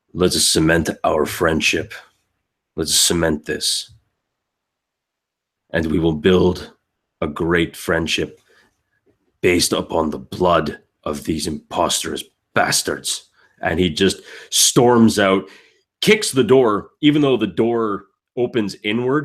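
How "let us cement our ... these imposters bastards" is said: deep, low elf voice. Retelling a story, the speaker voices an elf who draws his swords, in a deep elf voice. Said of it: "just in this like kind of deep voice, even deep voice, even for an elf".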